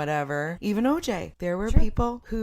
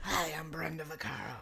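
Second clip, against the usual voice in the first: hushed, soft, odd, weird voice; 3 semitones lower, 12 dB quieter than usual. Recalling a seventies celebrity who sold tampons: imitating Brenda Vaccaro's weird voice. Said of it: "she had a very, like, weird voice".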